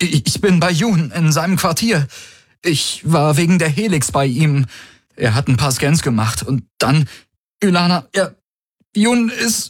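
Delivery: put-on breathless, broken-off speech. A narrator reads Garlin calling Ylana from Yun's quarters: feigned breathlessness. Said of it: "Er gab sich atemlos".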